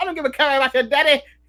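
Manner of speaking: put-on taunting tone in an Australian accent. Imagining a wrestler taunting an opponent, Grayson Waller Aussie accent. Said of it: "in his Aus-, Aussie accent going".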